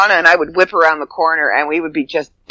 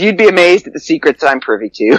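normal talking voice

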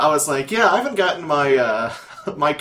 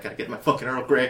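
mock jittery craving voice, quieter; 2 semitones lower, 6 dB quieter than usual. Picturing the other speaker craving tea, imitating someone shaking for tea.

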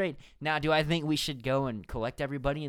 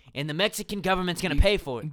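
ordinary talk

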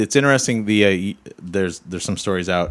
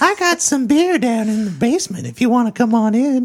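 loud, very high, creepy pervert voice; 4 dB louder than usual. Offering to tell a friend more in another voice, doing a Family Guy pervert voice. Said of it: "I can't tell if you're the pervert".

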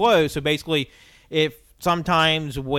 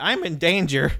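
imitated cartoon child voice; 3 semitones higher than usual. Doing the voice you heard in your head about a masked character, in a Ralph Wiggum voice. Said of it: "I just had like the Ralph Wiggum voice in my head".

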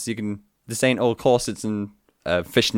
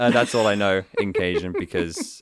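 normal talking voice

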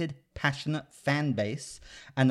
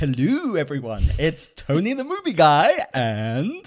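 silly fake voice, louder; 3 semitones higher, 8 dB louder than usual. Opening the podcast episode to crack up the co-host: ridiculous put-on voice. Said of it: "That was ridiculous".

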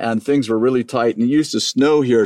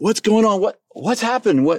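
mock very high-pitched, alarmed, panicked voice; 10 semitones higher than usual. Retelling finding the kids in a dark house: imitating own panicked voice. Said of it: "I'm in a panic".

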